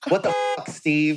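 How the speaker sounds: signature tone, leaning on the word "fuck". Retelling how Mo reacted on opening the thing: imitating Mo's tone. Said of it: "his tone when he goes".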